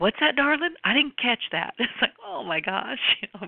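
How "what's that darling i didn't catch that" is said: put-on hearty, big booming voice, pitched up. Recalling a man they miss asking them to repeat, imitating a booming voice. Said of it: "I can still hear him booming".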